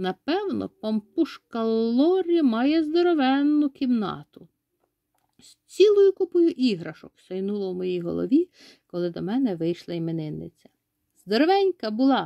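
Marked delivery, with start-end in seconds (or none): 11.3-12.3 happy, exclaiming joyfully. The narrator greeting his friend, the birthday girl: joyful exclamation. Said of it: "радісно вигукнув я".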